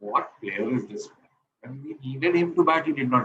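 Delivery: ordinary talk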